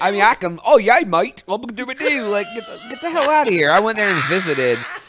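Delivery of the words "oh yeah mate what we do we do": put-on English accent with raised pitch. Mocking people who pick up accents abroad: mock english accent.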